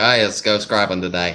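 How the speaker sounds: put-on casual, easygoing, broad Australian bloke accent. Imitating how Big Keg sounds: redneck Australian accent. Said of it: "sound just like Big Keg, 'cause that's what he sounds like".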